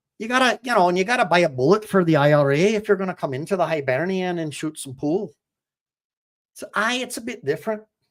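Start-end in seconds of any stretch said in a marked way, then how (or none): 0.2-5.3 Irish brogue, done for show. After a Glaswegian-sounding attempt, the speaker demonstrates how an Irish accent should sound. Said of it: "You got to talk a little bit more like this".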